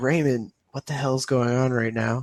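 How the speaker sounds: hushed whisper. Speaker acts out what he whispers while helped from the bathroom to the couch, retelling his whisper. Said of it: "he whispers to you".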